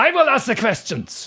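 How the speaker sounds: put-on German accent, very loud, shrill, booming. Delivering the punchline of a knock-knock joke in a German accent. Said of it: "people doing German accents".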